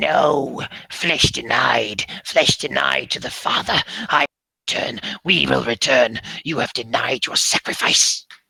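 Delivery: low, loud, drawn-out shrieking monster screech. Narrating a fight and voicing the creature, in a screeching creature voice. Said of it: "it's screeching voice saying".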